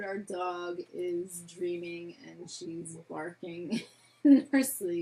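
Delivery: words broken up by hard laughter. Explaining why the dog is barking in its sleep: laughing hard while talking. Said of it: "I'm laughing so hard".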